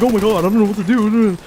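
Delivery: freaking out. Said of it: "he was freaking out".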